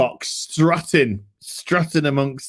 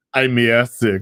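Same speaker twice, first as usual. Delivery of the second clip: flat voice with no inflection, pitched lower; 3 semitones lower than usual. Retelling a scene where a character claims airsickness: imitating Arnold's deadpan delivery. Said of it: "no inflection in his voice".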